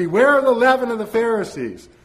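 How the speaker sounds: ringing, very loud, high-pitched cry. Retelling words spoken amid a huge, jostling crowd, as a very loud cry. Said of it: "in a very loud voice".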